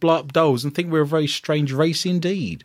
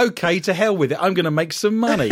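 plain

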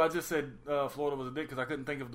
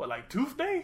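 very high-pitched tooth fairy voice; 12 semitones higher than usual. Acting out the Tooth Fairy being interviewed about a holiday, as Eddie Murphy as the Tooth Fairy.

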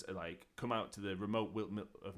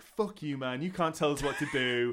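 mock aggressive girl voice, higher and louder; 5 semitones higher, 6 dB louder than usual. Retelling how teenage girls hiking answered a patrolman: imitating aggressive girls. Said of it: "these girls are surprisingly aggressive".

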